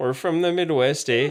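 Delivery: put-on Canadian accent. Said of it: "That's Canada".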